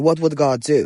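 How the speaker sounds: ordinary talk, nothing marked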